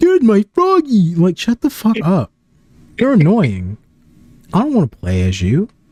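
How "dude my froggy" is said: very high-pitched, dim-witted sounding voice. Mocking a game character who is calm while a nuke goes off: imitating Big the Cat, dim-witted. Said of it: "he's all like".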